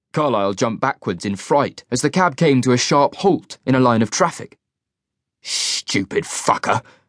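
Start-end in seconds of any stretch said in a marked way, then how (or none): 5.4-6.9 hushed, breathy hissing under the breath. A man nearly run down by a taxi curses at it, hissing. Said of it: "he hissed".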